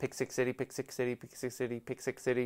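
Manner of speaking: said fast like a tongue twister. The speaker repeats a phrase as a tongue twister, said fast as a tongue twister. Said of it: "Say that ten times fast".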